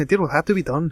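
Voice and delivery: put-on Scottish accent, plainly said. Recapping a show scene, the speaker redoes Fitz's line with a Scottish accent. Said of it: "He's gonna have a Scottish accent".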